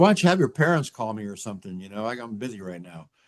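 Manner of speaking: ordinary talk, nothing marked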